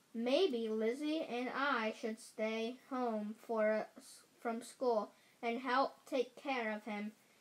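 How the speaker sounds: plain reading voice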